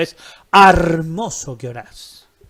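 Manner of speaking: stress on "hermoso", said slowly and loudly.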